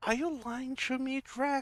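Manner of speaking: very high, sad, quivering, wobbly voice. The storyteller voices Pin the pressure plate, speaking to Drac: Pin, sad and quivering. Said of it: "looks at you all sad and kind of his lip is quivering".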